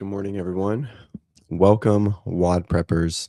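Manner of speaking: smooth-jazz, raspy, low morning voice. Greeting the WOD Preppers at the start of the morning: raspy morning voice. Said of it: "my smooth jazz voice in the morning, my raspiness".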